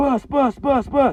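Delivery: very slow, high, long drawn-out yell. Telling a story about a bus crash, imitating a man screaming. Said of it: "And he's screaming".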